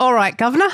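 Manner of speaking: put-on London Cockney accent. Imagining what she would say if she spoke: Cockney accent. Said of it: "she would speak in a Cockney accent".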